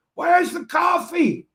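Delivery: play-acted high screaming shout. Retelling walking in unable to hear as people ask if okay; retelling a deafened scream. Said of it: "And I'm screaming because I can't hear".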